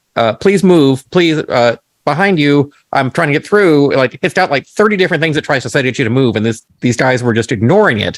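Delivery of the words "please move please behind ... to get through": polite, courteous robot voice. Retelling how a food robot asked blocking people to move: imitating a polite robot. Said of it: "the robot keeps very politely going".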